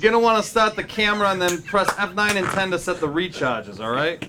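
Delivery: put-on Boston-accented speech. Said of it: "I'll do a Boston Mechanic to read it".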